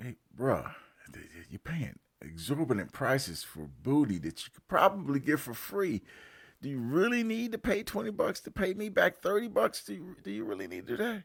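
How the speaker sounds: low-key, real quiet, hushed talk. Retelling what they quietly told a coworker asking to borrow money: imitating speaking real quiet. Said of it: "real quiet".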